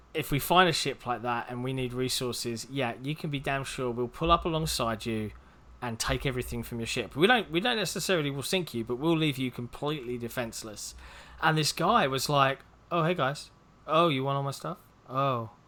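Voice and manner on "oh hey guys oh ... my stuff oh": play-acted mournful, dejected, sad tone. Retelling how a guy reacted when the crew took his stuff, imitating a sad voice. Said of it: "he sounded really sad".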